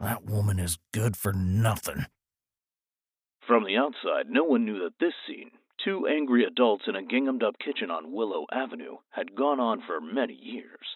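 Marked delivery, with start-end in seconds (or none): 0.0-2.0 muttered under the breath. Guy, after cursing at Myrna over the dirty floor, muttering under his breath. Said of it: "he muttered".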